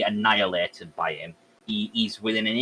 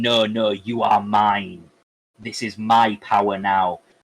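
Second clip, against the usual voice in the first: slow, drawn-out monster scream; 4 dB louder than usual. Retelling Peter tearing the symbiote off, imitating Venom screaming. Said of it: "he's screaming".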